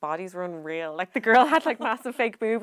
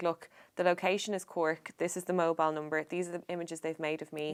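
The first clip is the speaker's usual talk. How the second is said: ordinary delivery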